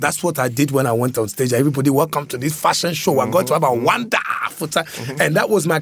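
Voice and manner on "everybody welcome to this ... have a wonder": put-on Nigerian accent, faster. Student on stage at a university fashion show, impersonating a friend's Nigerian uncle. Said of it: "I impersonated my friend's Nigerian uncle".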